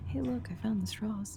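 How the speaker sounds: hushed, quiet, secretive stage half-whisper. Asked how loud she is talking, Kalila half-whispers to the party: quiet half-whisper.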